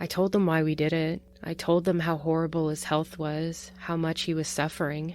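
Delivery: ordinary talk, nothing marked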